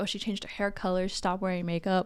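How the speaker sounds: usual speaking voice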